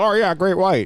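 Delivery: put-on very high, loud small child voice. Discussing sharks with co-hosts, answering as a kid would in a little kid voice. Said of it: "little kid voice".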